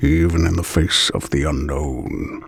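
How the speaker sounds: aged, worn, very deep low warrior voice. Reading a chapter aloud, the narrator voices the warrior in a worn, old, deep voice. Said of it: "worn, old, deep voice of the warrior".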